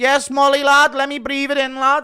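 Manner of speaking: very loud, high-pitched shout. Doing a bit about Paddy after Molly's shot, Paddy impression. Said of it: "Impression of Paddy after Molly does a".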